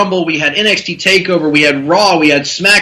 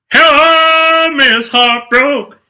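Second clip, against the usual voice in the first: very high put-on voice, "hello" drawn out; 9 semitones higher than usual. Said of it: "That's my [name] voice".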